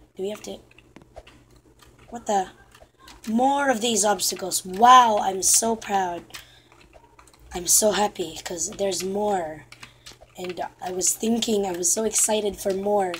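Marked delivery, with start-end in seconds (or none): 4.7-13.2 insincere, dripping sarcastic cheer and enthusiasm. Gamer reacts to more obstacles in the game; sarcastic. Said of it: "I'm being sarcastic right now".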